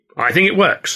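unyielding, stubborn. Ed, arguing with his wife over the staging, holds his ground: stubborn. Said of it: "Ed said stubbornly".

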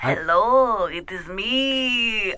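put-on vampire voice, "me" drawn out. A caller greets the hosts during a call-in bit, in a vampire voice. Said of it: "That sounded like a vampire".

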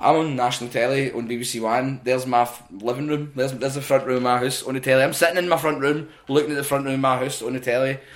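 plain

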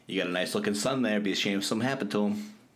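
fake wiseguy gangster accent, put-on mobster voice. Joking that orcas talk like a crime family: put-on mobster crime family voice. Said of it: "they talk like that".

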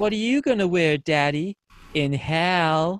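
creepy flat deadpan, "hell" drawn out. Retelling a kid's answer to a man's question, in a put-on creepy deadpan child voice. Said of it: "goes in this really creepy deadpan child actor voice".

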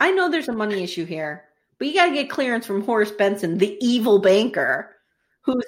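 ordinary talk

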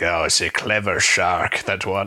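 low, weird, strange pirate voice. Retelling the shark scene, speaker voices Quint: weird pirate voice for Quint. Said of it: "I'm doing like a weirder pirate voice for Quint".

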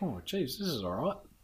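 normal talking voice

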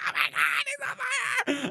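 very high, swooping, drawn-out wailing scream. Retelling a prank, the speaker quotes his sister and friend, imitating someone screaming. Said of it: "start screaming me like".

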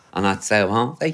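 plain

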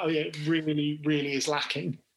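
usual speaking voice

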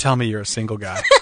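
put-on confident delivery. Quoting what a woman said after walking right up, imitating a very confident voice. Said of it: "in a very confident voice".

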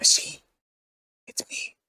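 soft, hushed whispered voice. Voicing a character who speaks from behind the machine: whispering character. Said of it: "You hear a little whisper behind you".

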